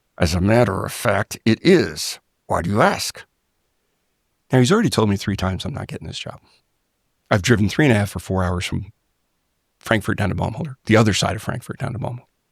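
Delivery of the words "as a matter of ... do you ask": words forced very slowly through clenched teeth. Retelling a program manager's reply, imitating talking through gritted teeth. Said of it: "he's talking to me through gritted teeth".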